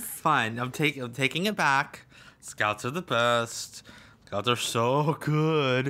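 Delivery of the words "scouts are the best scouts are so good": hollow, insincere, sarcastic delivery. Pressed by another speaker to take back a remark, conceding: sarcastic. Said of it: "You're being sarcastic about it".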